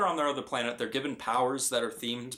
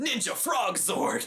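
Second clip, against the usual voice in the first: high, dramatic, mock heroic battle-cry yell; 9 semitones higher than usual. Telling about a guy whose animal was a frog; imitating someone yelling. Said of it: "he yells".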